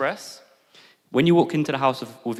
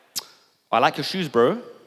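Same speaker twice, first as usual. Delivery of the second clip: slow, backhanded, needling, passive-aggressive polite drawl; 4 semitones higher, 4 dB louder than usual. Speaker showing another way to react to a guest keeping his shoes on: passive-aggressive. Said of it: "If I was being passive aggressive".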